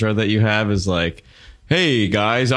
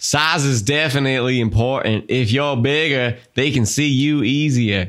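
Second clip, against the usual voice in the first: put-on Southern US accent; 3 semitones higher than usual. Reading a listener's quote aloud on a co-host's request, in a Southern accent. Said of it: "We have to read it in a Southern accent".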